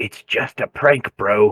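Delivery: whispering. Answering another character in character after an ear pinch: whispering. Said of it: "And I'll whisper back".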